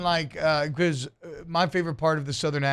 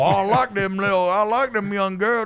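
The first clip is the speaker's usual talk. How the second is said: put-on extreme marble-mouthed Southern accent, pitched higher; 5 semitones higher, 4 dB louder than usual. Quoting a man from the Johnny Carson show: imitating Lee Johnson's extreme Southern accent. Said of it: "that accent's so extreme".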